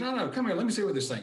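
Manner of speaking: high-pitched. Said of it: "he's got kind of a higher pitched voice".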